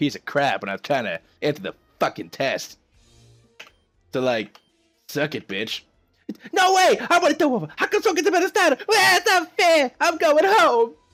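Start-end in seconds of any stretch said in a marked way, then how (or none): 6.5-10.9 put-on very high, whiny sore-loser kid voice. Voicing a rival who lost a game battle: whiny sore loser kid voice. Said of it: "What a little bitch".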